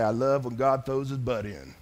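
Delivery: put-on hillbilly accent. Quoting his dad's saying while explaining a verse, in a put-on hillbilly accent. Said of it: "I don't know why I gave him that accent".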